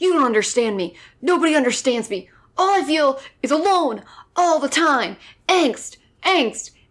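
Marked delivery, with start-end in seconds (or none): 0.0-5.2 put-on gruff, brooding, angsty voice. Mocking an actor's one-note performance, imitating him in a mock gruff brooding voice. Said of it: "He just sounds so gruff".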